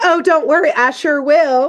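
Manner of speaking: high, sassy, put-on Southern grandma accent. Retelling a character's reply to a bully: sassy southern grandma voice. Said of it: "a little sassy Southern grandma".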